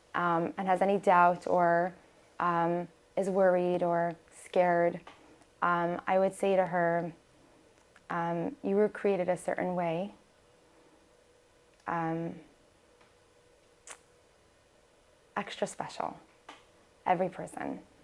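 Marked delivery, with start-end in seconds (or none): 8.6-17.8 choked-up, emotional voice. Answering what to tell a young girl with doubts: getting emotional. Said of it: "I don't know why I'm getting emotional again".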